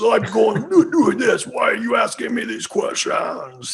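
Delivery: very high, drawn-out, slow put-on devil voice. Imitating the devil from an audio interview, put-on devil voice. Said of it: "He's got that voice".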